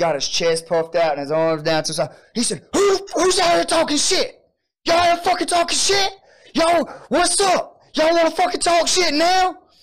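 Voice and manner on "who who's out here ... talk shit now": play-acted, very high, shrill screaming voice. Retelling how a man rushed out the door: imitating a man screaming. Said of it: "And he's just screaming".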